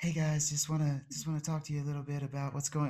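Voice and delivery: soft, hushed, barely voiced speaking voice. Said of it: "talk like [name]".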